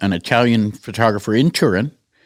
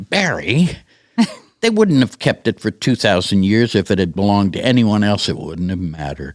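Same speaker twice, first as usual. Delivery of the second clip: condescending, patronizing, talking-down motherly voice. A son retells his mother answering his question, imitating her condescending tone. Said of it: "she got that condescending tone of voice".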